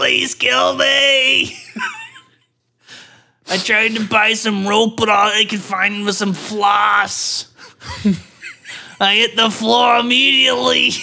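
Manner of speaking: put-on high, swooping elderly Brooklyn accent.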